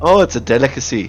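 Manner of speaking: put-on Minnesota accent. In a role-played scene, a character explains the name Hot Dish, Minnesotan accent. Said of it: "the Minnesotan accent is so hard to do".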